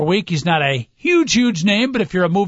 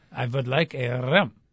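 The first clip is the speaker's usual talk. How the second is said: put-on French accent, lower and quieter; 5 semitones lower, 7 dB quieter than usual. Acting out a comedy hotel scene, guest asking for a room: Inspector Clouseau voice. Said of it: "Not bad".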